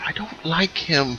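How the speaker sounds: put-on very slow, hushed little girl's half-whisper. Voicing a child who tugs a cloak to warn the player: half-whispering child voice. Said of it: "She kind of whispers to you".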